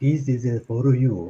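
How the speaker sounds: slow, deliberate delivery, each word weighed. Recalling a Kill Bill scene: Sonny Chiba impression. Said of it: "reminds me of Sony Chiba".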